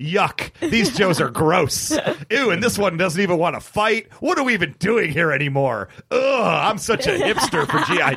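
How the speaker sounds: mock voice, thoroughly disgusted, full of revulsion. Speaker describes a G.I. Joe character walking among the Joes, Beachhead acting disgusted. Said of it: "Beachhead is thoroughly disgusted".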